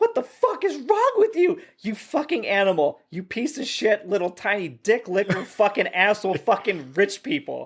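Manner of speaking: put-on high, swooping, furious screaming tirade. Retelling a movie scene where a stranded woman yells at passing drivers: imitating a woman screaming. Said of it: "she's screaming".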